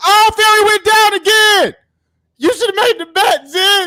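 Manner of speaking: very loud, very high excited hollering. Reacting live as a fighter goes down again: yelling while watching a fight. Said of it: "my bad if I'm yelling".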